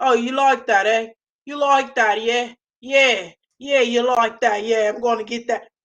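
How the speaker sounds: put-on, loud English accent throughout. Imagining how the man would talk in bed: imitating him in an English accent. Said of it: "I can just hear him saying".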